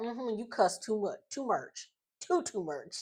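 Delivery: put-on scolding tone in a country accent. Retelling what their best friend's mom said, in a country accent. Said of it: "all you heard was that country accent".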